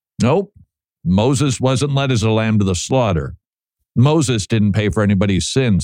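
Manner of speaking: ordinary delivery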